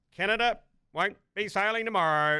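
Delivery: high, loud Aussie bloke call-out. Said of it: "and then he goes".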